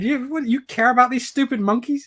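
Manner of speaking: disbelieving, high-pitched voice. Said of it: "She's just thinking".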